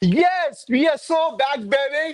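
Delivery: high, thrilled, excited cheer. Answering a request to celebrate a win: screaming at the top of lungs. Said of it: "scream at the top of your lungs again".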